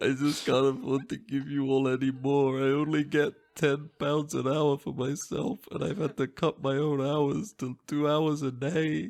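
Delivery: acted crying. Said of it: "and I just start to cry".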